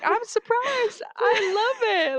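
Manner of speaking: put-on southern old lady voice. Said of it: "Why do we sound like old ladies".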